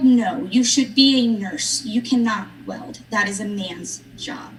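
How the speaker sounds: ordinary talk, nothing marked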